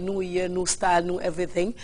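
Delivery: ordinary delivery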